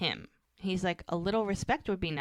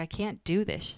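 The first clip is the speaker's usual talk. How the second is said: mock tearful crying voice, much slower. Recounting a scene between two women, imitating someone crying. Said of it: "And Hope's like crying".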